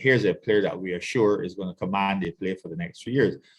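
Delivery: ordinary talk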